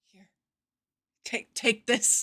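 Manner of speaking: frazzled, very stressed-out, horribly creepy delivery. Imagining getting into her bed to hand her something, acting very stressed out. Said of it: "Like very very stressed out".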